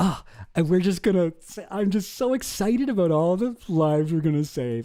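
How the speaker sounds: acted earnest, beaming, gushing delivery. Mocking how a smiling man talks about it, imitating a charity-foundation tone. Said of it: "talking about it in like the tones".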